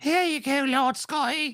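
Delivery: very high, put-on British crone voice. Imitating a friend feeding someone grapes: imitating Taylor as a British hag. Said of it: "a British hag in my mind".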